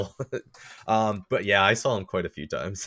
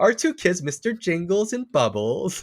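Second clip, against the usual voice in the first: mocking voice, pitched higher; 9 semitones higher than usual. Mocking how pet owners describe their family: imitating a fur baby owner. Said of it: "I don't know why I'm using that voice".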